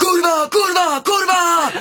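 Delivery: fake screaming, pitched very high. Recounting a frightening fast ride, retelling how a man screamed. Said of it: "Då skrek han".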